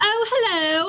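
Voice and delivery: put-on English accent. Retelling how mom orders food in London: imitating a put-on English accent. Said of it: "you're not English. So why are you talking that way?".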